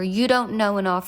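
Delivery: plain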